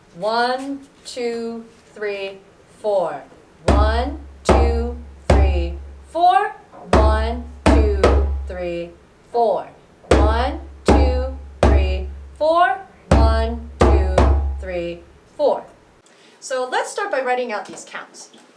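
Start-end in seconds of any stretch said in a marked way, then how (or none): 0.2-15.7 very slow, loud, deliberate, drawn-out delivery. Counting a rhythm again after saying it goes pretty fast: slowed-down counting. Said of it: "let me slow it down".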